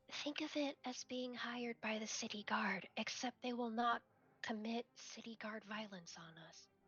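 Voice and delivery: hushed, in-character half-whisper. Playing a character who leans down and half-whispers to another: half-whispering in character. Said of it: "Peach leans down and whispers to Basil".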